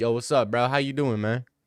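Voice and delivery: acted laid-back bro voice. Retelling how Arby greeted the speaker, imitating Arby's bro greeting.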